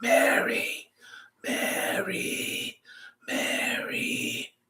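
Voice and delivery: hushed, soft stage-whispered calling voice. Showing the quiet way to call for Mary, whispering. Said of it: "This is the one where you have to whisper".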